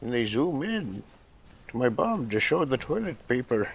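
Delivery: put-on sliding further into Irish accent. Improvising as an old bear from a toilet-paper advert, drifting into an irish accent. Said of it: "drifting into Irish".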